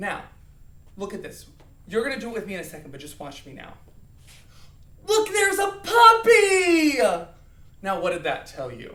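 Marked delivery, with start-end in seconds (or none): 5.1-7.0 very high, very loud, very slow happy excitement. Showing how tone changes what a line tells, said happily. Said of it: "I was probably happy".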